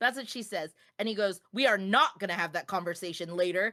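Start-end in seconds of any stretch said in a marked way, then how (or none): 1.5-3.7 acted mean, aggressive man voice, lower. Retelling what a man snapped at a woman at a tattoo shop, mimicking him mean and aggressive. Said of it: "he was just so mean and aggressive".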